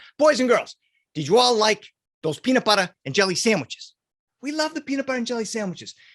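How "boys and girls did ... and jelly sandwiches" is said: imitated Boston accent. Quoting an uncle from Boston talking to the boys and girls, Uncle Tom's Boston accent. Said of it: "so he has a Boston accent".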